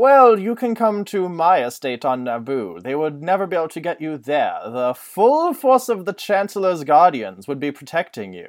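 swooping, sing-song voice with pitch gliding. Retelling a book scene, doing an imitation of Palpatine. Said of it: "imitation of Palpatine".

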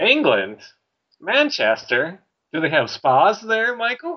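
TV host voice, high and swoopy. Imitating Phil talking to a fan from abroad: Phil impression. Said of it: "your impression of Phil".

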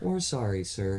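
gentle, soft-spoken voice. Retelling what the service people said after being yelled at, in a soft voice. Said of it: "such a soft voice".

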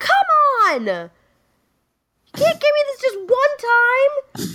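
mock very high, very slow, drawn-out, angry pleading yell. Retelling yelling at her room after her underwear disappeared: imitating her own past yelling. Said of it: "And I remember yelling".

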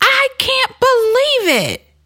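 play-acted very high, swooping, drawn-out shriek. Retelling a woman getting out of a minivan, imitating her screaming. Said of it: "she's screaming".

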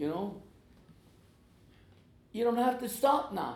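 high, loud, incredulous tone.

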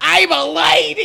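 very loud, shrill New York accent shout. Showing how the speaker loves yelling the line, in a yelled new york accent. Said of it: "like a New York accent".

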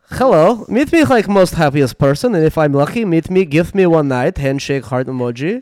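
very loud, booming comedy character voice. Reading a message out loud to the others after asking to do it like Borat, Borat voice. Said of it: "Can With I read it like Borat?".

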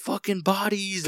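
high, slow mock yell.

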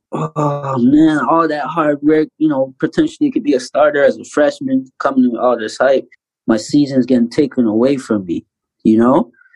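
ordinary talk

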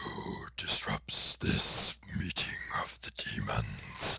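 breathy, whispered movie-demon devil voice. Recalling a demon character from a show, in the classic Hollywood devil voice. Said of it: "the classic Hollywood devil voice".

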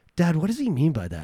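soft, quiet, almost private hushed voice. Retelling what a young son asked his dad: imitating a child speaking softly. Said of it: "said really softly, but I heard him".

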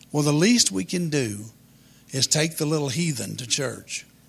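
ordinary delivery

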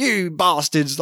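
fake Cockney accent, laid on thick. Describing how a film character's accent changes, imitating a Cockney accent. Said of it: "more of a Cockney".

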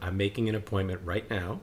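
ordinary delivery

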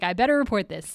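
normal talking voice

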